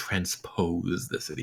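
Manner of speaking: mumbled under breath. Recounting another's reaction at the table, muttered under breath. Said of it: "mutters under his breath".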